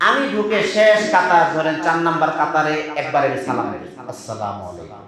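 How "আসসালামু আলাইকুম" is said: very soft, quiet, gentle voice. Greeting people praying in the mosque without disturbing them: very soft, gentle voice. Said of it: "খুব আস্তে করে মৃদু আওয়াজে".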